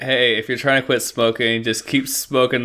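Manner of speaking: normal talking voice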